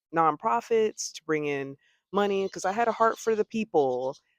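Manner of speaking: plain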